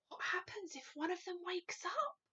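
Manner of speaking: frightened, hushed, high-pitched half-whisper. Reading a story aloud, the army head asks about the giants: half-whispering. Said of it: "whispered the head of the army".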